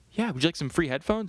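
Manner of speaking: sugary, sweet, super-nice high-pitched voice. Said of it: "flight attendants are so sweet and so nice".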